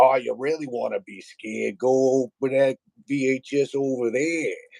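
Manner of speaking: put-on heavy Boston accent, laid on thick, drawn out. Retelling what a man from Boston told the speaker as a kid, thick Boston accent. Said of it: "that thick Bos- Boston accent".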